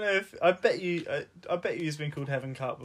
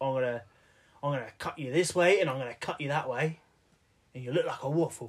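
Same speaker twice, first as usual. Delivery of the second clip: put-on East London Cockney twang. Quoting what the only British person there said, in a Cockney accent. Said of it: "He was like Cockney".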